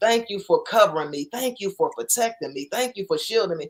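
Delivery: play-acted, fast, tearful voice, crying throughout. Recounting a close call to a listener, retelling own tearful prayer. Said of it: "just crying".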